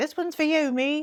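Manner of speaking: terrible fake British accent. Restarting the take, the speaker dedicates it to themself in a terrible British accent. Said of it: "[in a terrible Bri’ish accent]".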